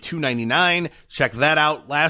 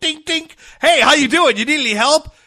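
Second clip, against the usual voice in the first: very high, loud, chirpy voice; 12 semitones higher, 8 dB louder than usual. Imitating the paper clip checking in on the user: imitating Clippy. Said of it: "they check in on you and go".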